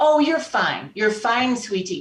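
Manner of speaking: put-on reassuring, comforting tone in a Scottish accent. Retelling what a woman said after the wrong test was arranged, in a scottish accent. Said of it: "in this wonderful Scottish accent".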